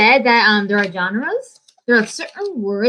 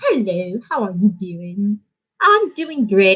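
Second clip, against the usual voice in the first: put-on British accent, not quite convincing. Trying a British accent after saying it won't be right: attempted British accent. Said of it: "Try to make me do a British accent".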